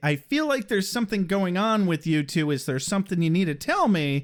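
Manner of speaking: normal talking voice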